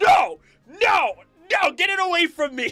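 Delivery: very high, frantic, drawn-out panicked shout. Retelling seeing a spoiler thumbnail with megas: imitating own panicked shout. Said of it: "and I was like".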